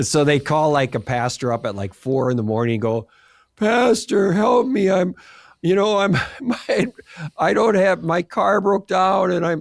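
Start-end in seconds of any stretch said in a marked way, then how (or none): 3.6-9.6 high, slow, put-on desperate pleading. Retelling radio callers phoning a pastor at 4 a.m., acting out a fake plea for help. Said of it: "they'd act like they were needed help".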